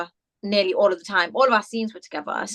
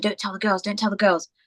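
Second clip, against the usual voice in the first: whispered delivery. Retelling how the boys warned each other about the castle: imitating someone whispering. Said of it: "whispering, going".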